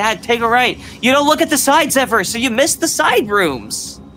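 high-pitched, exasperated, frustrated shouting. Guiding dad through a co-op game, yelling. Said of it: "I'm sorry, I didn't mean to yell".

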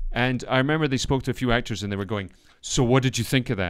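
ordinary talk, nothing marked

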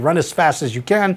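normal talking voice

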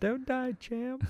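mock tearful, weepy voice, pitched way up. Quoting a scene from a weepy boxing film: weepy impression from The Champ. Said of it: "that's my impression".

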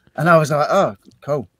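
ordinary delivery

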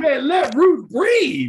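put-on high, loud, slow, drawn-out shout.

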